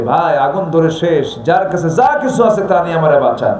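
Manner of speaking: ordinary talk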